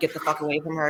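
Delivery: ordinary delivery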